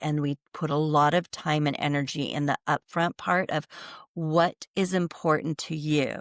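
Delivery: plain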